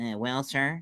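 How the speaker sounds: nasal voice, through the nose. Showing an impression of a former president: nasal George H. W. Bush impression. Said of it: "He was more nasally".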